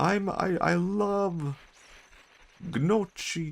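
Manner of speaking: very high, slow, funny voice, "love" stretched out. Voicing the made-up Mario look-alike again: funny Mario voice. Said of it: "That's with funny Mario voice".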